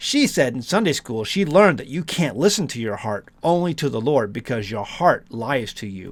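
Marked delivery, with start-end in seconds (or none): none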